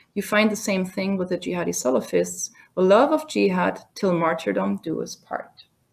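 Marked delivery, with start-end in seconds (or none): none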